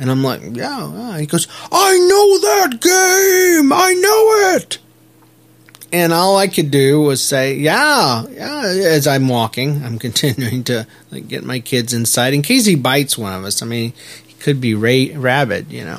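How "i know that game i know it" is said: put-on very high little-kid voice, "game" stretched out. Retelling a boy's reaction to the speaker's shirt: retelling a boy's scream. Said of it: "he screams".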